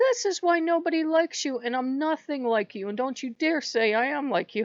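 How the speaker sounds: mock, heated, sharp, high-pitched scolding. Retelling a yell at a goddess: imitating someone yelling. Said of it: "I'm yelling at this goddess".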